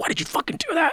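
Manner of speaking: whispered, breathy, upset hushed outburst. Retelling yelling at the pinned-down thief: retelling being upset. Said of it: "I was upset for him".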